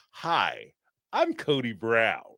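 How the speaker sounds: very slow, drawn-out, swooping horror-villain voice. Reading a chat note that Cody sounded like American Psycho: Cody Brown like American Psycho.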